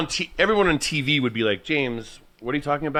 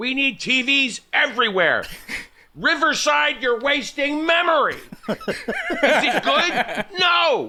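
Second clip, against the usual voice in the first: put-on yelling voice, higher pitch; 11 semitones higher than usual. Answering after hearing about the impression, yelling at people: Jon Taffer impression. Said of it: "you do an impression of John Taffer".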